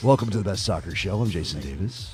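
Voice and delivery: low gravelly voice. Welcoming listeners to the show live, gravelly voice brought down low. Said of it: "Feeling a little gravelly this evening".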